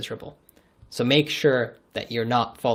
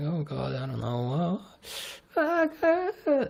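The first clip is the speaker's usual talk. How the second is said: anxious, unsure, soft, slow mumble; 6 semitones higher, 3 dB quieter than usual. Showing how an anxious, unsure way of talking sounds: talking nervously. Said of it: "if I talk to you like this".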